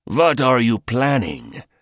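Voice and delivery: hoarse, raspy, rasping voice. Reading a character questioning the Englishman before his group, raspy voice. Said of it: "The raspy voice asked".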